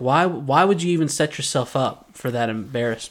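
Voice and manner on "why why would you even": plain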